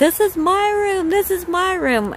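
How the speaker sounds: high, loud, excited screaming.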